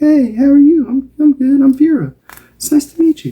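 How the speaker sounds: very high, tiny, squeaky mouse voice. Picturing an aunt who wants to talk, doing Aunt Vera's high squeaky mouse voice. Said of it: "she had a bit of a high squeaky mouse voice and she's like".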